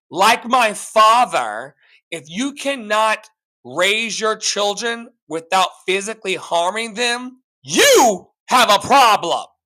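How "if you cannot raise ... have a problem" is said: raised, passionate voice full of conviction. Speaker making a point to a listener, in a raised voice. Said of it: "I'm raising my voice right now".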